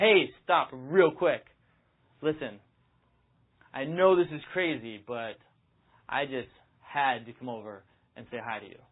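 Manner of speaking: bold, commanding, slow, authoritative delivery. Demonstrating how to stop a woman on the street, authoritative. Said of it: "It's got to sound authoritative".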